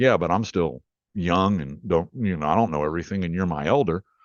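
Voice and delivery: ordinary talk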